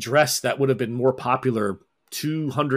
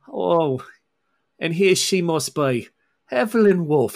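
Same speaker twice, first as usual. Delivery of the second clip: put-on heavy Scottish brogue, a bit higher. Retelling how someone greeted another person when they walked in, in a put-on heavy scottish brogue. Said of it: "this heavy Scottish brogue".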